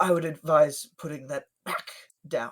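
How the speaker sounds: voice catching in the throat, as if something lodged. Voicing a character warning a player to put the book back: something lodged in his throat. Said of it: "like there's something kind of, like, lodged in his throat".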